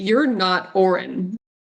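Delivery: declarative, stated-outright tone. Speaking in character so people in the hallway can hear: saying it loudly. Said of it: "I'm going to say loudly so that people in the hallway can hear me".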